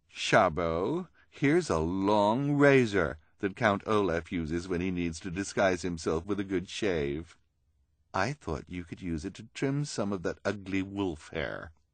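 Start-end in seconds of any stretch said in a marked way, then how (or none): none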